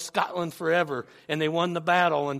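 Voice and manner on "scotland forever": ordinary talk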